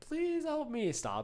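very high, begging, pleading shriek. Retelling how the octopus cried out while left to die, retelling a pleading scream. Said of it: "After she is screaming for fucking what seems like 20 minutes".

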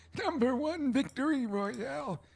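ordinary delivery

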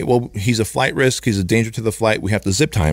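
ordinary talk

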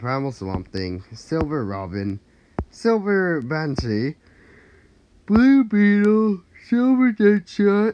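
yawning, just woke up. Reading out a list of game characters, yawning, just woke up. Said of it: "Sorry for the yawning".

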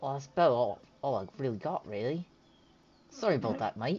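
put-on Australian accent. A character finishes listing spells and apologizes, australian accent. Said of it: "I like the Australian accent".

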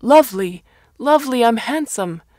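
hoarse, muffled, shrill, very loud yelling. A man staggers off into the rain, calling out for someone: hoarse, muffled shouting. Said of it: "His voice sounded hoarse and muffled".

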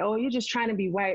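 ordinary talk, nothing marked

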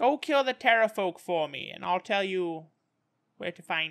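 put-on impossibly ancient, old woman voice. In a tabletop game, playing an impossibly old woman offering visitors a deal: impossibly old woman voice. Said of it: "You realize it's a human woman, impossibly old, crippled by arthritis, blinded by cataracts".

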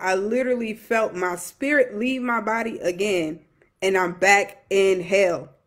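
ordinary talk

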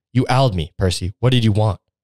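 firm, demanding, insistent tone. Facing the man who summoned her, she speaks in a firm, demanding voice. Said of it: "Her voice is firm and demanding answers".

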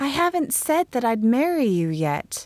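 gentle, slightly high-pitched voice. The narrator answers Russ after he describes their future together: gently. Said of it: "I told him gently".

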